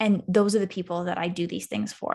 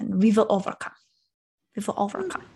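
put-on heavy German accent, laid on thick, rattled off. Retelling what their grandfather always said, in his thick German accent. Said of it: "he said it in his thick German accent".

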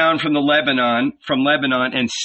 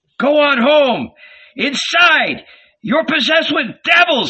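very high, shrill, frantic shrieking scream; 11 semitones higher, 4 dB louder than usual. Narrator voices Jesus's brothers dragging him along, screaming. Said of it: "they screamed".

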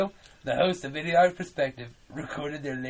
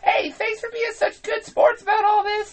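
very high, loud, squeaky bad cartoon voice; 7 dB louder than usual. Narrator telling a story, voicing Morty thanking Steven and Austin: Morty impression. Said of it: "Don't you love my Morty impression?".

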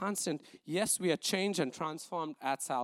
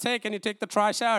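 very loud, high-pitched shout; 5 semitones higher, 9 dB louder than usual. Telling an example of rushing to work: imitating a wife shouting. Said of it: "your wife shouts".

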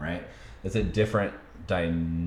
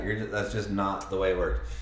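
normal talking voice

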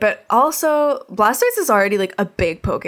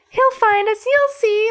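put-on optimistic cartoon mouse voice, higher; 13 semitones higher than usual. Retelling a cartoon episode, quoting Pikachu reassuring Bulbasaur: imitating an optimistic Pikachu. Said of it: "this little optimistic, like, electric mouse".

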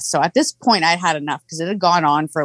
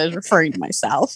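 usual speaking voice

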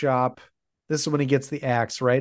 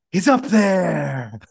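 mock extra-dramatic, theatrical announcer-style yell; 3 semitones higher, 4 dB louder than usual. Retelling how Peter answered when the spotlight shone on him: imitating Peter's theatrical yell. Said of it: "very theatrically, Peter goes".

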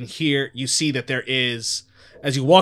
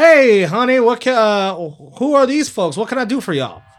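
higher-pitched rural farmer character voice; 9 semitones higher, 7 dB louder than usual. Voicing the farmer husband as he greets the players: voicing the farmer husband. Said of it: "As he's approaching y'all, like".

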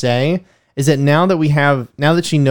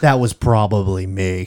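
slow, deliberate, drawn-out delivery; 6 semitones lower than usual. Trying out a line as Doctor Strange: Benedict Cumberbatch voice. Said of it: "I'm trying to get the Benedict Cumberbatch".

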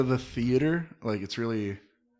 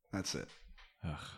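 ordinary talk

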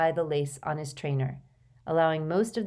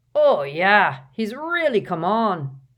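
loud, proud delivery, full of pride; 4 semitones higher, 8 dB louder than usual. Reading a novel aloud, voicing a character's line, proud. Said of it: "said Hagrid proudly".

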